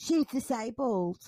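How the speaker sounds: acted-out loud speech. Recounting what a teenager said about her at the pool, retelling a loud remark. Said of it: "says quite loudly".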